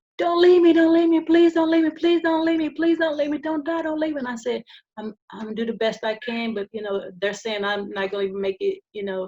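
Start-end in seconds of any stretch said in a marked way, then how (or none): 0.2-4.2 acted-out loud, high-pitched screaming. Retelling a daughter's plea by phone: imitating someone screaming. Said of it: "and she's screaming".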